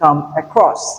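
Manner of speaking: across stressed hard, come kept soft and light. Explaining stress in the phrasal verb come across: stress on across. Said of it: "Across is stressed, whereas come is unstressed".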